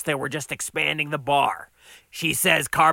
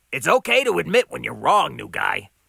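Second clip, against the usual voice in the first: ordinary delivery, nothing marked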